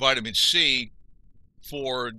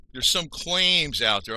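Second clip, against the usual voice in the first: the word claims stressed, slow and a bit higher. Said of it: "I'm emphasizing the word claim".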